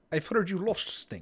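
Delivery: muddled put-on Russian accent creeping through. Voicing a character for the players: Russian Sean Connery voice. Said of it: "I'm trying to do Sean Connery, but I'm still in the Russian".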